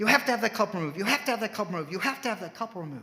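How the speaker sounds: insistent yelling, loud and high, repeated. Retelling a man yelling in a courtroom at the judge: retelling a yell. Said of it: "he started yelling".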